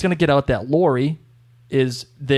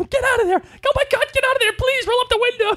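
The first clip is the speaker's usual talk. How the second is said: mock shrill, very high, pleading scream. Retelling another speaker screaming at the television: imitating someone screaming at the TV. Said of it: "screaming at the television".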